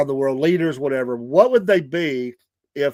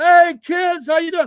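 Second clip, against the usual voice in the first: high-pitched, loud, jolly tone. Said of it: "And he's".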